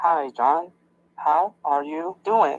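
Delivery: speaking slowly. A man practicing talking slower greets John; speaking slowly. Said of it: "I hope this is slow enough".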